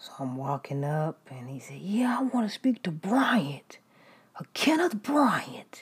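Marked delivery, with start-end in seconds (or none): 1.8-5.8 put-on man screaming and yelling, high voice. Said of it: "screaming and yelling".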